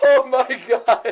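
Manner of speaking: talking through laughter. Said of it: "I'm sorry for laughing at my own joke".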